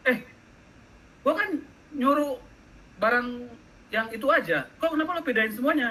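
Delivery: high, indignant, annoyed whining voice.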